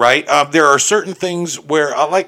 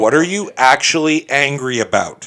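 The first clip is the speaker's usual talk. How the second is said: ordinary delivery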